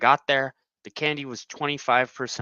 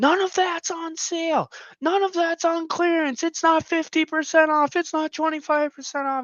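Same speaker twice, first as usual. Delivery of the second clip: put-on very high, top-of-the-lungs full-out yelling. Retelling how a store worker ran up and yelled: imitating a worker yelling. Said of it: "full out yells, like, yells top of his lungs".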